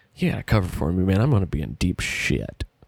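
hushed, secretive whisper. Retelling leaning over and whispering in someone's ear: imitating a whisper. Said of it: "whisper in the other".

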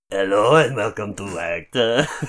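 bad put-on Spanish accent. Imitating the show's episode introducer: bad spanish accent. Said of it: "best Spanish accent I've heard".

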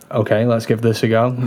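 ordinary talk

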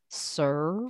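bone-dry, sardonic, sarcastic butler voice. Describing a dry, sarcastic mentor character: dry sarcastic Alfred voice. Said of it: "like Alfred being like".

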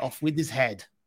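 put-on French accent. Signing off after getting rid of Eric, in a French accent. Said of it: "with the French accent".

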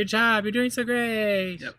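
mock very high, cooing, coaxing baby talk. Pretending to cheer on a pizza in the oven: mock coaxing a baby. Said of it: "coax it and say".

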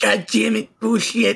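acted fed-up cursing fit, high and drawn-out. Retelling how a player flips the table: imitating an angry outburst. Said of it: "decides to flip the fucking table over and is just like".

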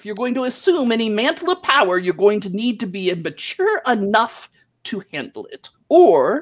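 put-on stern, scolding, lecturing ghostly old wizard voice. Voicing the long-dead wizard master addressing his former pupil, dead wizard master's voice. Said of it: "Yes, the voice is of your long dead wizard master, [name]. / Yes, the voice is of your long dead wizard master, [name]. / Yes, the voice is of your long dead wizard master, / Yes, the voice is of your".

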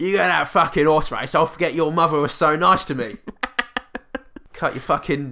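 convincing Cockney accent in a dad voice. Showing off an accent used in Suffragette, doing a convincing Cockney dad accent. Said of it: "a convincing Cockney dad accent".

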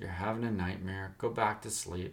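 ordinary delivery

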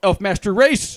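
fervent, righteous yell, pitched high. Voicing a character yelling as he leaves through a door: righteous yell. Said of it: "Mort turns around and goes like".

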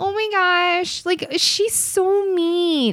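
put-on very high, babyish little rich-girl voice.

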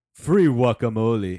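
big, very loud put-on voice. Showing the others how the line should be said, in a deep voice. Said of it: "You went all deep".

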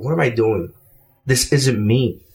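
low, inward, private talk to oneself aloud. Recounting a moment in a Vegas mall, quoting what they said to themself, retelling quiet self-talk. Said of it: "I literally go to myself in a low volume voice".

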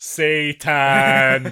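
slow, loud, drawn-out, deliberate repeated phrase. Retelling how a cop repeated a word: imitating saying it slower. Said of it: "Just says it slower".

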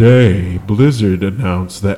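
put-on dry, boring monotone. Imitating a gaming news YouTuber's delivery: Young Yeah impression, dry boring voice. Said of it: "like Eeyore from fucking Winnie the Pooh".

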